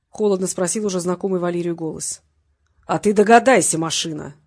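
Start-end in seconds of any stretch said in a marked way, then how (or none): 2.9-4.3 mocking, taunting, louder. Vasilyev answers the voice on the phone, mocking. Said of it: "насмешливо произнес Васильев".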